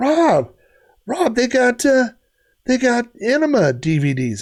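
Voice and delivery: play-acted, high, drawn-out yelling. Retelling how a friend yelled across the store: imitating a friend yelling. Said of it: "he's yelling at me".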